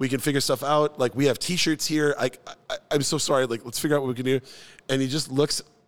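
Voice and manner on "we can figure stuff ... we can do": acted flustered, frantic manner. Retelling frantically apologizing to a guest: retelling own flustered apology. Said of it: "trying to apologize and be like".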